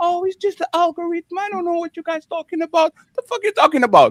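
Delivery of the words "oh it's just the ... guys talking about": put-on, dainty, pitched-up princess voice. Mocking what someone says on the internet, put-on dainty princess voice. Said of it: "you do the princess voice".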